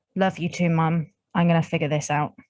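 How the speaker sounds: whispering quietly under her breath. Playing a character alone after her mother vanishes: whispering under her breath. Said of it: "under her breath whispers".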